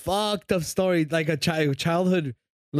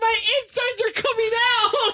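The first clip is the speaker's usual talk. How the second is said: mock very high, rushed shriek of panic. Recounting getting stuck while peeing, the speaker reenacts screaming in panic.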